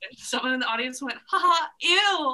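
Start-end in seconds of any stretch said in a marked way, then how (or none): 1.3-2.4 put-on shrill, very loud snobby girl voice.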